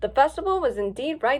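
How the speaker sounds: ordinary delivery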